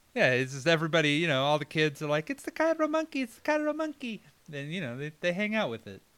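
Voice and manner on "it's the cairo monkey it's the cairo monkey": very high, childlike, put-on Egyptian accent. Imitating how all the kids talk, in an attempted Egyptian kids' accent. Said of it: "What kind of accent was that?".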